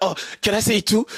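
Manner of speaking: play-acted eager, excited tone, light and keen. Retelling what his friend's friend asked the group, imitating excited asking. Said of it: "He was like so excited".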